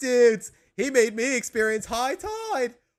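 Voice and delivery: terrible, loud, high cartoon voice, belted out. Recalling a SpongeBob episode for listeners, a bad Bubble Buddy impression. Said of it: "I can I do a terrible impression".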